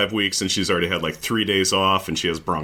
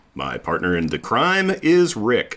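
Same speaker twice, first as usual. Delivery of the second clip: normal talking voice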